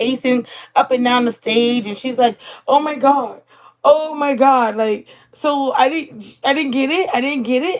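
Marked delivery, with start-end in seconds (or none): 2.7-7.8 put-on frantic, flustered, distraught disbelief, panicking. Retelling a performer's reaction after an audition: imitating someone panicking. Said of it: "Stacy's, like, panicking".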